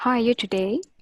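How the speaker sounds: pleasant, friendly, gently cheerful and lightly upbeat. A voice coach models the same greeting line again: with a little smile. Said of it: "Say the same thing with a little smile".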